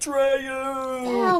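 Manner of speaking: high, far-reaching, carrying call.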